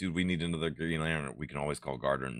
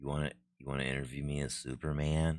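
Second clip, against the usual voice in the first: put-on small voice, quieter and lower; 2 semitones lower, 9 dB quieter than usual. Retelling a scene where a woman interviews Superman: imitating Superman's meek voice. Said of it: "He's talking in like a diminutive voice".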